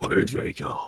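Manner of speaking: breathy, near-whispered, barely audible hero voice. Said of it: "his Batman voice".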